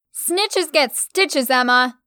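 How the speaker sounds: loud, ringing shout. Stella shouts at emma, the narrator, right after hitting her; shouted. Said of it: "Stella shouted".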